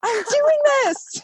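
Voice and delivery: hoarse primal scream, very high and stretched out.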